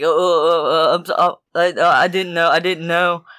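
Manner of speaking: mock stammering, stuttering delivery. Retelling how a man apologized after being confronted: imitating a stuttering apology. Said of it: "he started stuttering and shaking".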